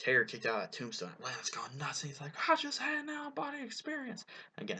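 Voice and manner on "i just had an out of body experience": bad, terrible, very high wrestling-announcer voice. Recalling a wrestling announcer's call at a big match: terrible j r impression. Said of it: "terrible J R impression coming".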